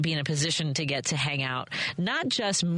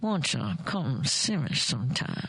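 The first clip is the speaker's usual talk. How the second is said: slow drawl in a put-on voice; 3 semitones lower than usual. Reviving a childhood impression after forty years: Mae West impression. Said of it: "I would do impressions of Mae West".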